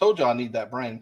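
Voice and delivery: ordinary talk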